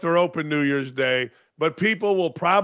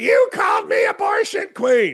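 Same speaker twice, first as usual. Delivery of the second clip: very high-pitched shouting; 13 semitones higher than usual. Speaker retells a woman screaming at them outside a Pacer game, retelling a scream. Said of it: "she starts screaming at me".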